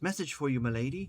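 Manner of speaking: panting, breathless voice, pitched high. Voicing a runner who arrives sprinting: out of breath messenger. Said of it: "he comes running and he's, like, out of breath".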